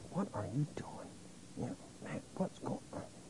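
very quiet, hushed whisper. Retelling talking to yourself during a phone call: imitating a whisper to oneself. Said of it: "I was kinda whispering to myself".

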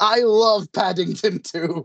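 high, very slow, drawn-out scream. Retelling a film scene where a character screams: imitating Nicolas Cage screaming. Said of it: "screams out".

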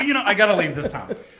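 high, loud laughing outburst. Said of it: "So I'm like".

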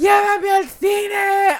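high, very slow, stretched-out screaming. Telling a story from a coffee shop, the speaker acts out Chris screaming. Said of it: "Chris starts screaming".

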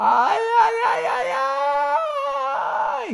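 piercing, shrill, very high shriek. Narrator reads the ant's cry as a hungry bird swoops down: screaming. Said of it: "Gritou a formiga horripilante".

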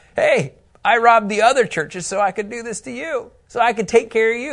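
dry, mocking sarcasm. Quoting Paul's words to a church: quoting Paul sarcastically. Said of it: "Paul says in verse eight with sarcasm".

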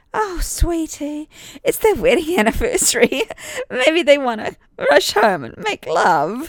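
very high, swooping, sweet cooing. Reading fiction aloud, the narrator voices a woman answering the father: cooing. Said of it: "cooed Mrs. Hendon".

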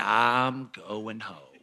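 very slow, unhurried, drawn-out words. Retelling what stepbrother's dad said at the game: imitating someone talking very slowly. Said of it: "he talks real, real slow".

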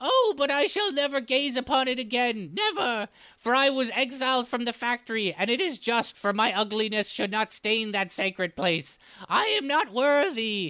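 high, gasping goblin voice near tears. A narrator voices the exiled goblin recalling a vision: gasping goblin voice. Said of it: "The goblin practically gasps when remembering".

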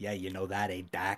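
put-on low, hushed Boston gangster accent. Quoting how he talks to the doctor, in a Boston gangster accent. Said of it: "A Boston".

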